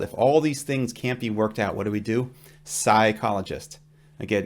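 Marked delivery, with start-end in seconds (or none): none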